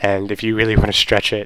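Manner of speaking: ordinary talk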